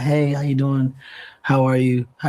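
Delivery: mock-somber, gloomy put-on tone. Mimicking how people greet when entering a room, mock-somber greeting. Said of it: "they're like very somber".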